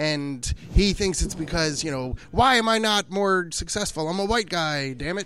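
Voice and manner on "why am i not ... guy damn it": usual speaking voice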